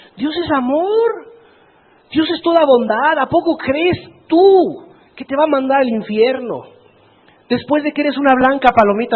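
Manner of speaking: ironic tempting devil voice. Acting out the devil's persuasion to a believer: put-on ironic voice of the devil. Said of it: "lo digo irónicamente".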